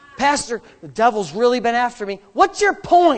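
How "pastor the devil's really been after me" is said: plain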